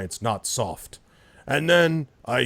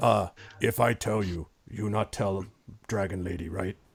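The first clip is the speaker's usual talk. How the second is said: rumbling, booming giant stage whisper; 4 dB quieter than usual. Voicing a giant who leans down to half-whisper a secret: booming giant half-whisper. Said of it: "every time he speaks, like, the whole room shudders".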